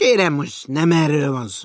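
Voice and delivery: very loud, shrill, impatient protesting voice. Mr. Vanek cuts in while the Lion questions a recruit; impatient. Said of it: "türelmetlenkedett Vanek úr".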